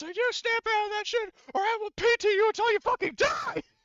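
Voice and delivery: put-on screeching, furious, very high-pitched. Voicing a character who screams at a panicked crew member: screaming across a hangar. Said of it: "he screams across the hangar".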